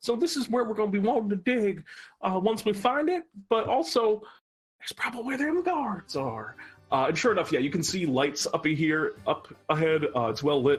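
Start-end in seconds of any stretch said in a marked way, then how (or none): 0.0-6.5 put-on character whisper, higher pitched. Voicing a miner character guiding the players underground: whispering character. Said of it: "Shiny Buttons kinda whispers to you".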